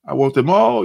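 ordinary talk

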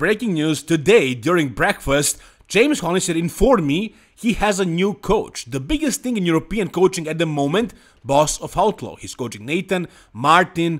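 plain

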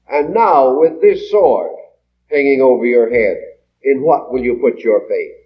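plain

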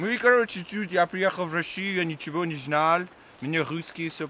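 Russian spoken with an American accent. Playing an american newly arrived in russia: american accent speaking russian. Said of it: "Американцы на русском с американским акцентом".

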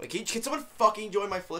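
sudden, far too loud, high blurt. A streamer asks viewers to join their flip, in a really loud outburst. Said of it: "I didn't mean to say it really loud".

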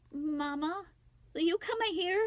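sheepish voice. Wally calls for mama to come in, sheepishly. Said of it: "Wally said sheepishly".

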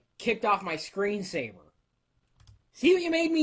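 loud, swooping, lightly sarcastic delivery. Complaining about answering the same questions again and again, a little sarcastic. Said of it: "It's a little sarcasm".

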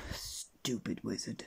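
muttering. Mr. Mean, after the wizard makes himself disappear, mutters. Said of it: "muttered Mr. Mean".

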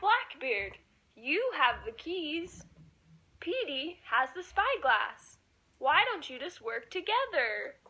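high-pitched storybook shark character voice. Acting out a story, the shark suggesting teamwork: Sammy the shark voice. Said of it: "Sammy the shark had a really good idea".

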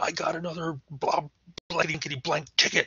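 very high, furious, angry yelling. Explaining tone in writing, the speaker demonstrates an example line: angry yell. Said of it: "I have an angry tone of voice".

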